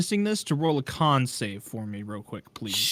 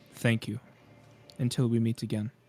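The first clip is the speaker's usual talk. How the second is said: perfectly calm, soft, quiet voice; 3 semitones lower, 6 dB quieter than usual. Game master voicing a voice in a player's head as he walks away, calm and quiet. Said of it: "a perfectly like calm and quiet voice".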